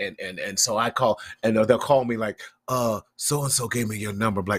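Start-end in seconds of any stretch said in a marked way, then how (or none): 2.7-4.4 whispered. Retelling a caller on the phone: imitating a caller whispering. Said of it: "Why are we whispering?".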